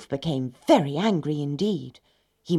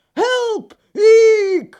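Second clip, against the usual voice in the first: very loud, very high shriek, Eek stretched; 12 dB louder than usual. The wolf lands in a cauldron of boiling water, screaming. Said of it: "he screamed and struggled in his rage".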